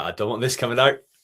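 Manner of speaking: high, loud outburst, voice gripped with panic. Retelling what a man said, imitating a panicked voice. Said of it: "the panic in his voice there".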